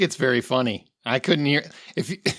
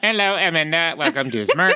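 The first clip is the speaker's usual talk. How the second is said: put-on robotic voice with British accent; 3 semitones higher than usual. Host welcoming amanda to the show smirk, in a british robot voice. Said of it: "That was a British robot".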